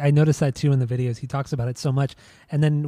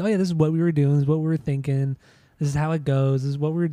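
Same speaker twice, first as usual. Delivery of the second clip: ordinary delivery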